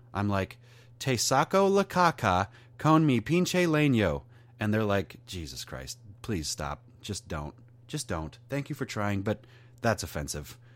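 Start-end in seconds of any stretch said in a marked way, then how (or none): 1.0-4.2 put-on very loud Spanish with heavy American accent.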